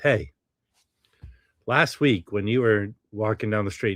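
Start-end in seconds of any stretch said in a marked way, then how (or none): none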